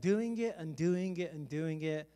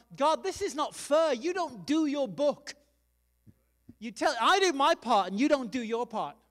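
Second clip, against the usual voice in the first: high, loud, drawn-out, deliberate mock angry yelling; 6 semitones higher, 6 dB louder than usual. Speaker retelling a man's story, acting out his yelling at God. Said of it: "he starts yelling at God".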